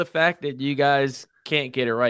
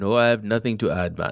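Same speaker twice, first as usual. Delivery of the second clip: clearly put-on, fake Jamaican accent; 3 semitones lower than usual. Asked to add anything before signing off, the speaker replies in a fake Jamaican accent. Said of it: "You don't like my Jamaican accent?".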